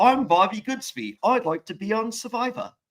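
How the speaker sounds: put-on British accent slipping Australian. Asked to redo his video in a british accent, he introduces himself: bad fake british accent. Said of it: "was like more Australian than British".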